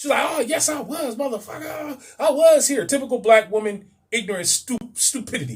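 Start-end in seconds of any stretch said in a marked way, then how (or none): 0.3-2.9 loud, high-pitched, drawn-out delivery. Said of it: "She was all loud".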